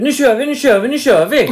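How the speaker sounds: repeated eager, fired-up yell, high and loud. Retelling how Anna urged starting the next episode recording: retelling Anna's scream. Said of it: "skrek Anna".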